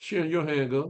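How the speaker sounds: high, casual, offhand dismissive tone.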